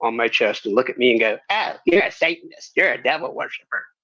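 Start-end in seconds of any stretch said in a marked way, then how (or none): 1.5-3.8 put-on elderly woman voice, pitched higher. Recalling a stranger reacting to the symbol on the speaker's shirt, imitating an old church lady. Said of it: "some old church lady walk up to me".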